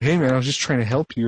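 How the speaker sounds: put-on accusatory tone. Retelling what a player said with an accusatory look: imitating an accusatory tone. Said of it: "accusatory look, and he was just like".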